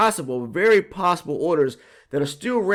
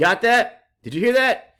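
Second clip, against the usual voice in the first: ordinary talk, nothing marked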